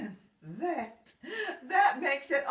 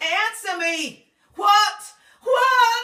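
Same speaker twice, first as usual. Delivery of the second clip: worked-up, excitable, loud raised yelling; 3 semitones higher, 7 dB louder than usual. Demanding that she answer the question, yelling. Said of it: "sit down and stop yelling".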